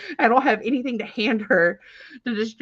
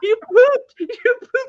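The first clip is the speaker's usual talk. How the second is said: put-on small child screaming, very high and shrill; 7 dB louder than usual. Telling a plane story, the speaker acts out the daughter: imitating a little girl screaming. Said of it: "she's like screaming it".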